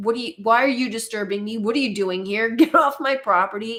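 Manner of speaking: aggressive, bristling, angry, hostile, defensive tirade. Retelling a farmer on a TV show answering police: imitating an angry, hostile farmer. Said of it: "Immediately defensive, angry, aggressive, hostile".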